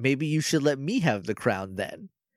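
acted, very calm mock delivery. Retelling a Power Rangers episode, acting out a character's line, imitating a calm delivery. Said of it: "like very calmly".

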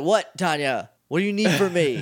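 groggy, half-awake, just-woken voice. Retelling a scene, Zordon just waking from a nap: imitating him just woken. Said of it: "just waking up from a nap".

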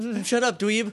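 put-on highfalutin accent. Retelling a line from the episode: Skull's highfalutin accent. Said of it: "in, like, the highfalutin accent".

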